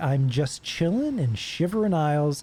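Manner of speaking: normal talking voice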